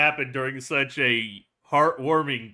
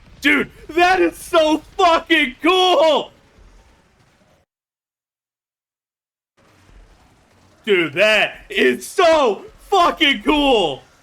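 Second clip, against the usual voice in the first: very high, loud, shrill, thrilled excited shouting; 13 semitones higher, 8 dB louder than usual. Reacting to a scene while watching a show: loud excited shouting. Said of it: "I apologize if I'm raising my voice too much".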